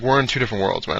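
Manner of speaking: usual speaking voice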